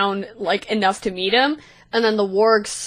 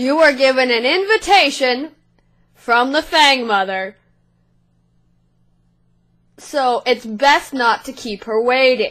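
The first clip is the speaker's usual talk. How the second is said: hollering, shouted goblin voice; 4 semitones higher, 3 dB louder than usual. Voicing a goblin on a warg calling up to the group on the hill, goblin shouting. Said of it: "shouts and goes".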